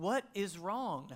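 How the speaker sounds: acted-out yell. Retelling calling out to someone who wouldn't answer, re-enacting a yell. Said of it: "And I yelled it again".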